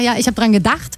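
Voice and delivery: the word "gedacht" stressed.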